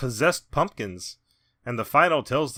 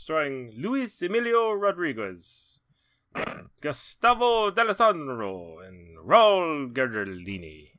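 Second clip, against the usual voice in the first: put-on slight Italian accent; 4 dB quieter than usual. Reading out names in a made-up movie cast list, in a slight Italian accent. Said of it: "saying the names with like a little bit of an Italian".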